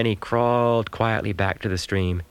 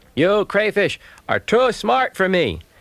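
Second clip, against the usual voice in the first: loud, raised, very high, swooping announcer-like voice; 11 semitones higher, 4 dB louder than usual. A hungry raccoon, nipped by crayfish, speaks to them in a loud voice. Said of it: "he said in a loud voice".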